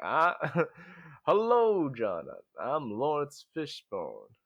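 very slow, weighty, commanding, swooping, deliberate cadence. Joking about an actor's screen presence: Laurence Fishburne impression. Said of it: "that's a really good impression".

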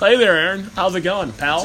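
ordinary talk

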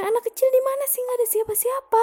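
high, fast voice with a dismissive tone.

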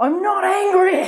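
very high-pitched, loud shout. Recounting a belligerent man's reply before a room of people, retelling a shout. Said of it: "he literally shouted".

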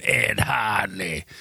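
put-on low, hushed, creepy old witch voice. Showing the voice they always do as a joke, a witch voice. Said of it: "I always do this voice of this this witch going".

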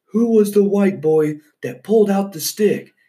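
thundering, booming yell, pitched way up. Retelling a threat shouted at a fire: imitating a booming voice. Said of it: "just his booming voice".

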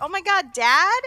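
mock very loud, high, startled shocked cry. Retelling the girl answering the Phantom: imitating her surprised reply. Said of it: "And she's like".

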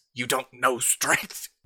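words spluttered out while choking. A wounded enemy, still standing, answers the party, sputtering through bloody lips. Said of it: "He sputters out through bloody lips".

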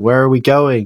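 play-acted alarmed, panicky, frantic voice. Retelling a movie tunnel scene where everyone panics: imitating panicked people. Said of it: "where everyone's panicking".

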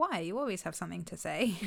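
plain

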